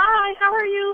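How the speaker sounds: small, sweet, high little phone voice. A caller greets the host on the line: sweet little phone voice. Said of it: "Listen to that little voice".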